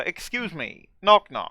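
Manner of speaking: robotic text-to-speech computer voice. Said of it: "I'll just do the text-to-speech voice".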